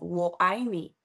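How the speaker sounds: usual speaking voice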